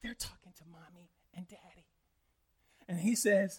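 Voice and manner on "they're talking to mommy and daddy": whispered, barely voiced. Retelling a story where a son answers the phone: imitating a child whispering. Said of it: "He's whispering".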